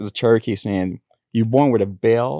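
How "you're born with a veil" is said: plain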